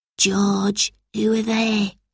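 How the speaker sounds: soft, breath-only half-whisper. Albert, hiding behind George after seeing two strangers, asks him; half-whispered. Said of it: "he whispered".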